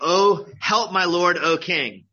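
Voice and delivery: crying out, loud and slow.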